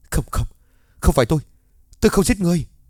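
frantic, fast, high-pitched terrified scream. Yelled at by another man, he clutches his head, a terrified scream. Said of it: "mình vẫn sợ hãi ôm đầu rồi gào lên".

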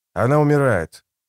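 ordinary delivery, nothing marked

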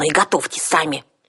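snapping angrily, sharp and curt. Criticized by the others over how she cooked the potatoes, she snaps angrily. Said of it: "окрысилась Арсана".

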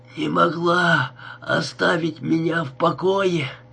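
put-on hoarse, wheezing, rasping voice. Narrator reads Danny's outburst at the two women, rasping. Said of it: "прохрипел Дэнни".

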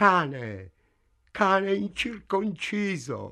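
sudden high shouted cry, "cane" stretched out. Narrator reads a woman crying out after a man kisses her: shouted. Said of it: "lei gridò".

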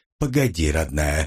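affectionate, gentle, tender voice, dropped low. The narrator speaking to Mara: tender. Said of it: "ласково произнес я".

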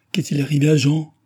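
high, anxious, worried, urgent outcry. Susanna, seeing dread in her father's and grandfather's eyes, speaks up in an anxious cry. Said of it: "Cria anxieusement Susanna".

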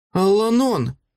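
high, sudden cry, calling out. A narrator reads a woman calling after the departing druid, crying out. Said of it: "вигукнула вона".

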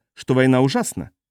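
plain

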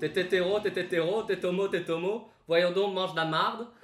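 loud, terrible, worst-possible put-on Canadian accent. Performing a quoted line for the group, in the worst Canadian accent. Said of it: "Pire accent canadien".

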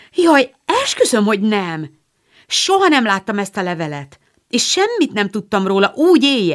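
crying out, exclamatory. Joe answers her mother's accusation, crying out. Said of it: "kiáltott fel Joe olyan keserves arccal".

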